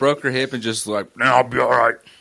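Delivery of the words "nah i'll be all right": tiny, wise, ancient sage voice. Retelling how a grandmother shrugged off a broken hip: Yoda voice. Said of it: "made her sound like Yoda there".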